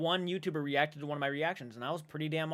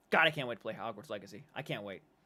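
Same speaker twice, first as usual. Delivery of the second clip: usual speaking voice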